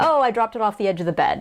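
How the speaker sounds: plain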